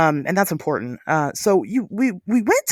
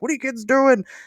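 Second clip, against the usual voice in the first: high-pitched hollered yelling; 7 semitones higher than usual. Retelling how a man in a truck yelled at them, imitating someone yelling. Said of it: "while he's like yelling at us".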